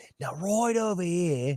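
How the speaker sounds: high Australian accent. Recalling a childhood party piece, the speaker does a Steve Irwin impression. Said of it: "I did a mean fucking uh, Steve Irwin".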